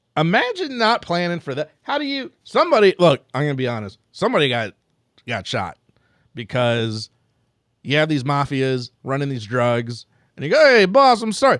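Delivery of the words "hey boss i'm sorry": bad put-on Italian accent, loud and high. Acting out a drug runner apologizing to his mafia boss, in a bad Italian accent. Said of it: "I'm allowed to do the bad accent".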